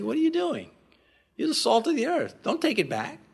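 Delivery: very gentle, tender, kindly yet brisk, quick delivery. Speaker quotes the Lord rebuking him, retelling gentle words. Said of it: "He said very gently".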